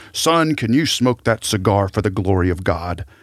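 put-on big loud voice. Telling a story of a revered man confronting a seminary student, in a big loud voice. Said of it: "in his big loud voice says".

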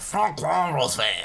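put-on French accent, metro station announcer delivery. Remembering a subway from when they were young, imitating the stop announcer: French announcer voice. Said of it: "and they go".

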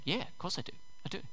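mock breathy, hushed, smug, self-satisfied whisper. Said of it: "sitting there a little bit smugly".

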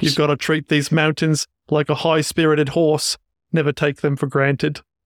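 put-on Australian accent. Quoting The Man from Snowy River: Jim Craig Australian accent. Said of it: "Are you ready for my Australian accent?".

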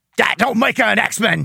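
rough, curmudgeonly, grudging grumble like a crusty grouch. Retelling how Wolverine approves of Kitty: curmudgeonly approving Wolverine voice. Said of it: "that curmudgeonly approving".

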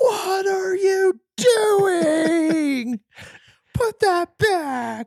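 acted top-of-the-lungs yell, very high, shrill, stretched out. Retelling what the speaker yelled at him, a retold top-of-lungs yell. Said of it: "at the top of my lungs, I yell".

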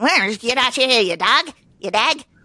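put-on Irish accent. Imitating a movie line from an Irish character: Brad Pitt Irish accent. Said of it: "he played, like, that Irish guy".

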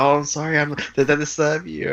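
high, sniveling, spineless, very apologetic tone. Retelling how the car's owner speaks in the film: imitating a very apologetic man. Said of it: "very apologetic".

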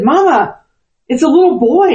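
breathless, panting, high-pitched voice. Retelling what a child said after running in: imitating someone out of breath. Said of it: "and he was out of breath".

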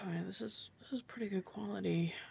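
soft, quick mumble to himself. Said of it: "mumbling to himself".

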